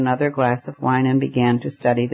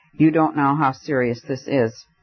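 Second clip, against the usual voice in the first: ordinary delivery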